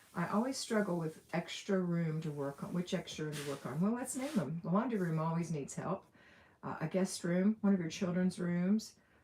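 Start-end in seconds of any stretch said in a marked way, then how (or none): none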